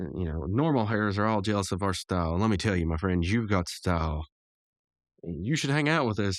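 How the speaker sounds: usual speaking voice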